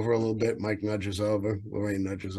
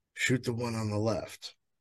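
imitated whisper, quieter than normal; 5 dB quieter than usual. Retelling what the PH whispered on spotting two rhino: retelling a whisper.

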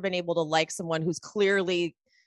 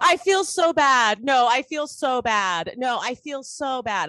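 acted, extreme sobbing, high and drawn out; 6 semitones higher, 5 dB louder than usual. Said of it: "Lisa's crying was, like, so".

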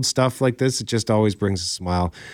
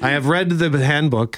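plain

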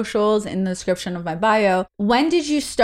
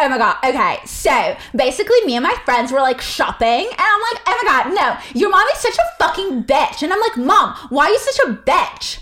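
put-on high, swooping valley girl way of talking; 7 semitones higher than usual. Speaker acts out a story after others mention valley girls: valley girl voice. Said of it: "Valley girl".

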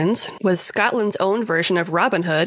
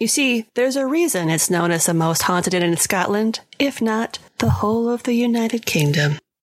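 ordinary talk

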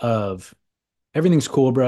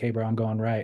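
calm, relaxed, unhurried, easy-paced delivery; 6 dB quieter than usual. Describing calling a wave while surfing, acting calm and unhurried. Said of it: "delivered without any franticness at all".

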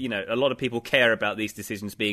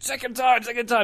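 put-on shouting voice, higher pitch; 13 semitones higher than usual. Describing a manager complaining on the sidelines: imitating Pep Guardiola shouting. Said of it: "apart from when he's shouting".

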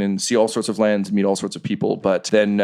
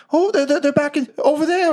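very high-pitched creature voice. Voicing a wind elemental creature that recognizes a stone: voicing a wind elemental creature. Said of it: "And it kinda, like, points".

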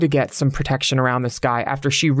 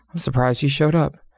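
put-on muttering, faster. Speaker retells what a judge said after a witness testified, retelling a judge's mutter. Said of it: "she kind of muttered".

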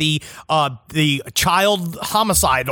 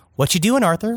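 put-on casual, unconcerned, nonchalant tone, higher pitch; 5 semitones higher than usual. Retelling a filmed therapy session, imitating a casual, unconcerned question. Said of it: "she's acting as if".

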